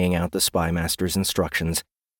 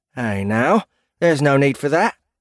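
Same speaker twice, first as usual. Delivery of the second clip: aggrieved, pitched-up complaining tone, small and plaintive; 7 semitones higher than usual. Reading Bandit's reply to Edward, complaining. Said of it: "Bandit complained".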